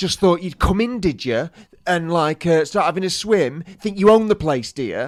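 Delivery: furious, high, angry scolding. Retelling a swimming instructor telling them off: imitating someone scolding like mad. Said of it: "he's scolding us like mad".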